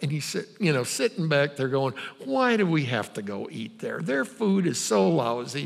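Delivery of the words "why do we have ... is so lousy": grumbling mutter under breath. Retelling a friend's complaint from the back seat: imitating someone grumbling under breath. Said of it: "kinda grumbling under his breath".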